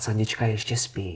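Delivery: hushed whisper. Retelling filming a video in the morning while she still slept, whispering. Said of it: "já budu šeptat".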